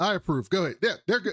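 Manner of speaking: rushed, high, fast rattle-off, words run together. Retelling how a man approved two names, imitating very fast speech. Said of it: "He said it so fast".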